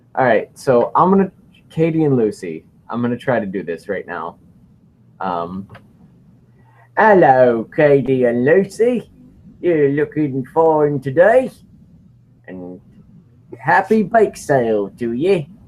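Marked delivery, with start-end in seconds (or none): 7.0-15.5 slow, best-attempt put-on English accent. Asked to greet Katie and Lucy in an English accent, the speaker tries: best English accent. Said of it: "say hi to Katie and Lucy in your best English accent".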